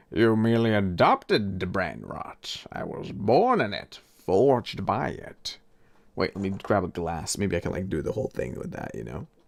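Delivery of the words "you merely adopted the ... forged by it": slow, drawn-out movie villain voice. Doing a reworded movie speech as a bit: Bane impression. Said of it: "I'm trying to do the Bane speech".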